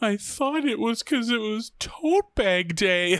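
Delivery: put-on trembling, very high voice about to cry. Retelling a scene where Lisa hears the plan, imitating Lisa's shaky near-tears voice. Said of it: "with a real shaky voice, like she's about to cry".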